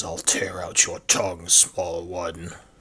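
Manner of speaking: low, menacing, growling orc voice. Voicing a character who growls at the listener's character, growling voice. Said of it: "so he growls and looks at you and says".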